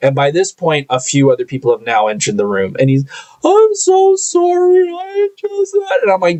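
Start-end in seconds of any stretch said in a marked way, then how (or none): 3.4-5.7 bawling, drawn-out, very high and slow crying. Retelling how a crying coworker apologized: imitating someone crying. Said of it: "He starts bawling his eyes out".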